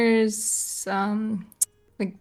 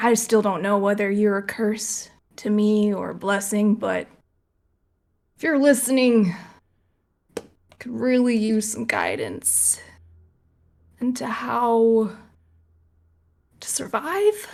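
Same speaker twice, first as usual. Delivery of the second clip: put-on slightly drunk, mildly tipsy speech. Player voices her character praying to her god, a little bit drunk. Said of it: "a little bit drunk".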